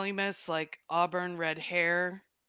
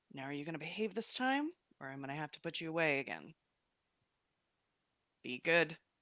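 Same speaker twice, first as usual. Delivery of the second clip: muttering quietly under breath, quieter; 6 dB quieter than usual. Voicing a character approaching the city, muttering under her breath. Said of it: "she muttering a little bit under her breath".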